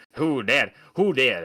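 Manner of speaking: put-on loud, slow, drawling southern accent. Describing a movie character representing himself in court, imitating a southern drawl. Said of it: "southern drawl type of".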